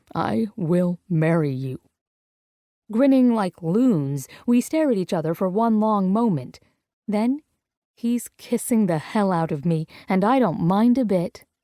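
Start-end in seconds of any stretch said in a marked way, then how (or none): 0.1-1.8 hoarse, rough voice. Reading a romance scene aloud, a man accepting a proposal: hoarse voice. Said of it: "he says in a hoarse voice".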